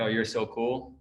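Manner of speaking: muttered under the breath. Retelling what his wife says at a race: imitating wife muttering under her breath. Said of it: "under her breath".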